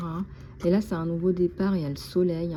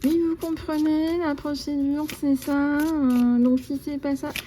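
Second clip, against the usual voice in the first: put-on, very high, nasal air-hostess voice; 9 semitones higher, 4 dB louder than usual. Imitating an air hostess who served her, in a nasal air-hostess voice. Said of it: "avec cette voix d'hôtesse de l'air, heu, nasillarde".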